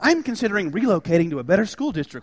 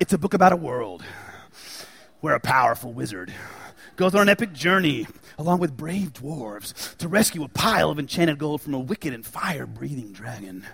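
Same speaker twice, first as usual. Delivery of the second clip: deep movie-trailer narrator voice; 4 semitones lower, 4 dB quieter than usual. Pitching The Hobbit to an uninterested listener, in a movie trailer narrator voice. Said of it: "I dropped down into my best movie narrator trailer guy voice".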